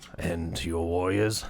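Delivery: deep, low disembodied voice. A narrator voicing a hidden voice from beyond a barrier gate: deep voice. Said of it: "you hear a deep voice emanating from inside".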